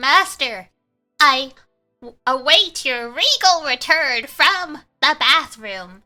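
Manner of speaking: slow, put-on sassy taunting voice. Retelling what a character says when you idle, mock sassy trash talk. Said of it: "she starts like shit talking and she's like".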